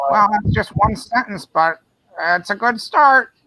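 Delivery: high put-on elderly voice. Acting out a writer whose sentence was so good it broke the keyboard, George R. R. Martin impression. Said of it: "a very good impression of George R R. Martin".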